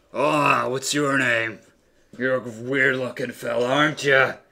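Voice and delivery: very loud, booming orc voice. Narrating a fantasy game, speaking as the orc to a player, orc voice. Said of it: "The orc looks at you".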